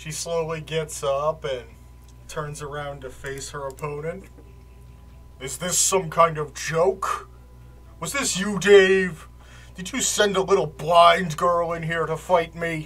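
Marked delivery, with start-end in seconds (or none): 5.4-12.9 loud, big, booming man's voice, shouting. Game master voicing a man who faces a blind girl opponent, in a booming voice. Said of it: "this man's booming voice".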